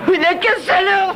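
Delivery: high, loud furious outburst. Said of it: "Du calme".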